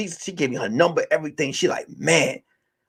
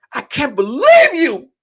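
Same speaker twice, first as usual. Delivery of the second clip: put-on tearful crying, very high and very loud; 11 semitones higher, 9 dB louder than usual. Retelling an argument and quoting Kim's reply, imitating Kim crying. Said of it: "Kim is crying".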